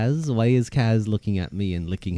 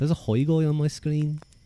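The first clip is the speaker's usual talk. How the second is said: faint trace of a Liverpool accent. Repeating a line off the screen, slight Liverpool accent. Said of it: "It's kind of getting into a little bit of a Liverpool accent".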